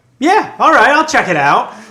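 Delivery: very high, loud, overconfident and cocky tone. Playing a naive first-time adventurer agreeing to check a portal: cocky adventurer. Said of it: "I'm cocky, and I'm like".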